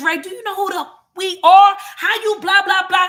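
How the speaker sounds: loud, high shouting. Retelling a diner's outburst in the dining room, imitating someone yelling. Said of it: "motherfuckers is yelling".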